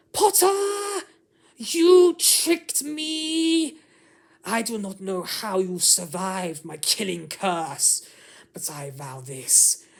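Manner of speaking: high-pitched, shrill, furious angry shout. Reading a story where a villain cries out in anger: high-pitched angry cry. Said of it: "cries out in a high-pitched voice".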